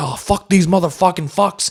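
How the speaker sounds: goofy, jokey comic-book voice, silly and slightly high. Describing how a comic book character talks: silly Negan voice. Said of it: "he's real silly".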